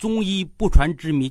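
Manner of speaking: ordinary delivery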